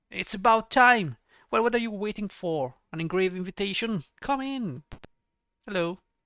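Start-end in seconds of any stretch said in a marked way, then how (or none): 0.2-4.9 put-on loud shout in old dwarf voice. Narrator voices an old dwarf calling the players through a door, shouting old dwarf. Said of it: "you hear a voice shout".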